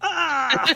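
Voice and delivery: shrill, very high-pitched, very loud, pained howling scream. Voicing the damage sound again: damage howl. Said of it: "howling up damage".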